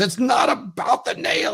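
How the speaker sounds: very high, slow, pissed-off angry delivery. Retelling a training video scene, quoting the woman: imitating someone getting angry. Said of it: "gets real pissed off at him".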